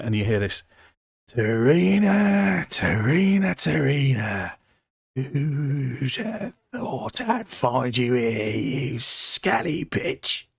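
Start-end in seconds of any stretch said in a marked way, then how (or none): 1.3-10.4 put-on pirate voice, "who'd" stretched out. Game narrator voicing a character who bursts in calling for a player's character; pirate voice. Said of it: "I gave him a pirate voice".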